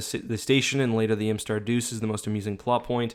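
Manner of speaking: normal talking voice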